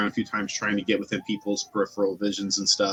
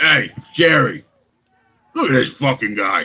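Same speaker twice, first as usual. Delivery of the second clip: confrontational orc voice, higher and louder; 3 semitones higher, 7 dB louder than usual. Voicing a big orc who leans down into a player's face: big orc getting in your face. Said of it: "he kinda leans down and gets, like, in your face, and he says".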